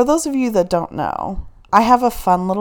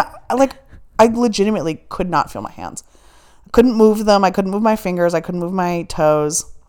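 usual speaking voice

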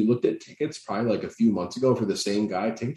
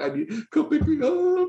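mock very high-pitched, tearful, crying, pleading voice. Picturing Matt on a concert bathroom toilet calling his wife, imitating Matt crying. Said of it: "just crying".

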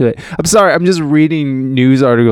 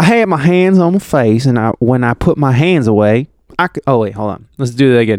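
put-on Southern American accent. Retelling a line while switching accents, put-on southern american accent. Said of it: "I'm just going to do a southern accent".

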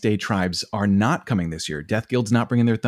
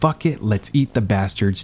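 ordinary talk

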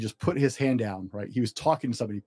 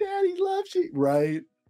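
put-on very high, sweet, super light baby-talk coo. Imitating a dad switching tone on the phone with his kid, super light voice. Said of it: "like just super light".

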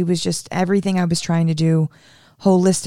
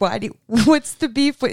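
mock yelling, higher pitched; 5 semitones higher than usual. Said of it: "you were, like, yelling at me".

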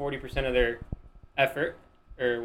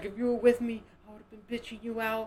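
sobbing words, very high-pitched; 9 semitones higher than usual. Retelling what a crying sister said to them mid-marathon, imitating her crying while talking. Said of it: "She's just crying".

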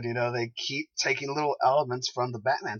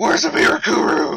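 put-on gravelly vigilante yell, louder; 8 semitones higher, 11 dB louder than usual. Imitating Ollie demanding answers: gravelly yelling Ollie voice. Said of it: "Ollie just going".

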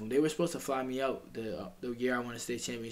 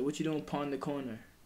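put-on Jamaican Patois accent, pon for on; 3 semitones higher than usual. Retelling what a grandparent said while driving by: imitating Jamaican Patois. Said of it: "they speak Patois".

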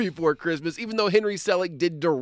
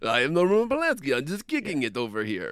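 put-on German-sounding, vampire-like accent. Playing a man hiding in France, do a Roman Polanski impression that sounds German. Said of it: "are you German now?".

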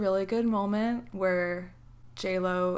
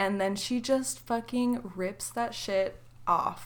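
normal talking voice

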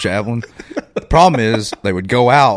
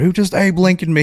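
put-on, high-pitched screaming outburst; 9 semitones higher than usual. Retelling how a friend shot in the head reacted: imitating someone screaming. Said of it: "started screaming".

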